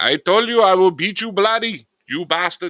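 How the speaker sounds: exaggerated Indian accent, very high and loud. Acting out someone's story about his father getting angry, in a weird put-on indian accent. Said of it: "the weird Indian accent".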